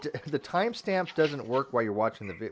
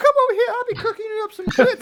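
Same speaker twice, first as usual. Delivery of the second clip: put-on woman's voice, higher and louder; 9 dB louder than usual. Retelling a prank call, imitating his female voice with a Southern flirt. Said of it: "he was doing his female voice".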